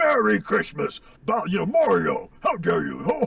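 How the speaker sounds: growling, jolly villain voice. Showing a voice made for Bowser: Santa Claus voice with a growl. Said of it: "just put a growl on him".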